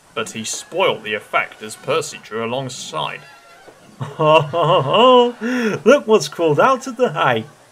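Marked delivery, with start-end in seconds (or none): 4.2-7.4 gleeful chortling, higher, louder, slower. Reading a children's story, a character greets another who arrives late, chortling. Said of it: "he chortled".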